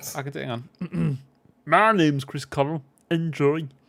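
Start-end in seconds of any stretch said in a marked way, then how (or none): 1.6-3.7 frog puppet voice, belted out loud. Trying to do the others' voices for them, slip into an almost Kermit voice. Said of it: "Why is that almost Kermit?".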